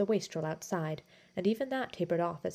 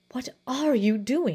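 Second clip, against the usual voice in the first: insistent, pressing, loud, high demanding tone; 5 semitones higher, 7 dB louder than usual. As Basil throws the painting into the fire, Thaddeus questions him, demanding. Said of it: "demanded Thaddeus".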